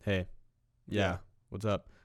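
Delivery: quiet, soft, casual, low-key, offhand tone. Retelling own quiet talking on a phone call: imitating own quiet phone voice. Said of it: "I was probably talking this loud".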